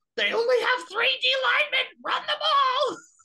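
very high, shrill, all-out screaming. Imagining the Ohio State coaches box after a penalty, imitating coaches screaming. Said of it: "Just screaming like".

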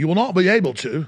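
bad Australian accent drifting into British. Quoting what the Australians have said: bad Australian accent. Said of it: "I can't really do a good Australian accent".

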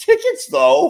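pitch creeping way up, ending very high. Repeating his own last words, voice getting a bit higher. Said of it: "as my voice gets a bit higher".

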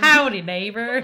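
loud, belted cartoon character voice. Copying the other speaker's neighbor greeting: Ned Flanders voice. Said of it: "You sound like Ned Flanders".

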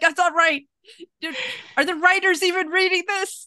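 mock, very high, shrill ranting shout. Retelling reacting to a show while crafting, yelling at the TV. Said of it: "start yelling at him".

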